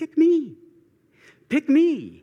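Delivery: tiny, very high, slow, drawn-out sing-song voice. Describing supermarket sensors that call out to shoppers: little high voice. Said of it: "a little like high voice that says".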